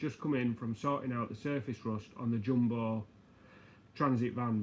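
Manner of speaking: ordinary talk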